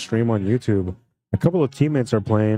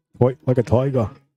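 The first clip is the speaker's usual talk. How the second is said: imitated Australian accent; 3 semitones higher than usual. Commentating a pool shot, in an australian accent. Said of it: "That's my uh, Australian accent".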